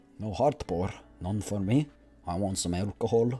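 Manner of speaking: poor, fake put-on Scottish accent. Actor plays a character in a scene, bad Scottish accent. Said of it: "My Scottish accent ain't very good".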